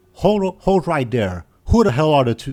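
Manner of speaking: angry loud shout. Narrating a game, speaker voices a man shouting at them as they approach: angry male shouting. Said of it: "you hear an angry male voice shouting at you".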